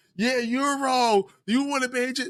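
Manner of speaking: very high-pitched mock yell. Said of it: "I was yelling like".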